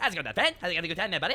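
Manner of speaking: fast, sped-up drawl in Newfoundland accent. Imitating people who merge West Coast speed talking with the Newfoundland accent: sped-up drawl. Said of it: "they take the speed talking of the West Coast and they merge it with the Newfoundland accent".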